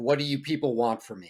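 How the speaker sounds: ordinary delivery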